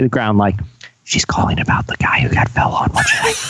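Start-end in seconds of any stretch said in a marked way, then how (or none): 1.0-3.3 whisper, put-on and acted. Acting out an imagined school worker whispering about a caller: imitating someone whispering. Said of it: "You hear her whispering in the back".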